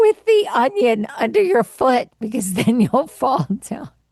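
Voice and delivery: talking through laughter. Describing a remedy someone told them to try, laughing while talking. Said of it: "I'm laughing, crying right now".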